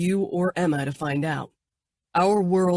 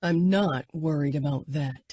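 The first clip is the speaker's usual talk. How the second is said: low, quiet voice with menace; 3 semitones lower than usual. Narrator reads a man's reply to her, in a low, threatening voice. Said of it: "Danilo said in a low, threatening voice".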